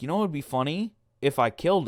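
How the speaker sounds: plain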